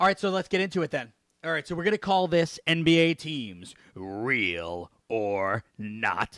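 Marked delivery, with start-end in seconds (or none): 3.9-6.4 very low, drawn-out put-on announcer voice. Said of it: "I don't know why I did that voice".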